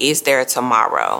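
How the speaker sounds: normal talking voice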